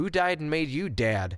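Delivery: acted, snarky, high sarcastic tone. Retelling what the kids say back to correction: imitating a sarcastic retort. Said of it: "sometimes they say it sarcastically".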